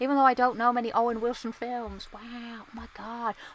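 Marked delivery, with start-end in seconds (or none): 2.1-3.3 wow breathed out very softly and slowly. Reacting to a cool screenshot: Owen Wilson impression.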